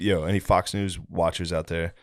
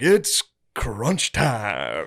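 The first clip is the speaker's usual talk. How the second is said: swooping, hyped knockoff ring announcer voice; 3 semitones higher, 3 dB louder than usual. Mocking copycat fight announcers: imitating a knockoff announcer. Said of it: "other guys, they're like".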